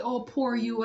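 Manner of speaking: ordinary delivery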